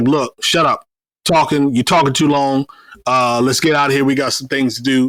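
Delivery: plain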